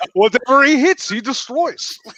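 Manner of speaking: high, very slow put-on Russian accent. Commenting on someone during a chat, in a put-on Russian accent. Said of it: "That's my Russian accent, by the way".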